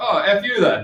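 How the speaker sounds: joking mock-annoyed tone. Retelling a man's joking reply on learning the speaker was 17; retelling a joking jab. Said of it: "kind of jokingly".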